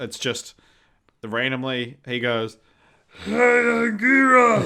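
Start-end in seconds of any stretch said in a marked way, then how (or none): 3.2-4.7 silly put-on monster voice, higher and louder. Retelling a film where Godzilla speaks to Anguillus: silly Godzilla voice. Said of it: "you think I'm just putting on silly voices".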